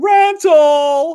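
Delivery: very high, loud yell of a single word. Recalling yelling after a bad movie trailer ended: yelled 'rental'. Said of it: "I would yell, ... Like that".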